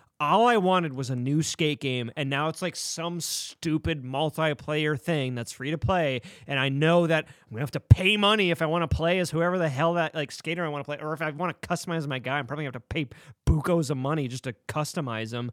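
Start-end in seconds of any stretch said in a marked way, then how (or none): none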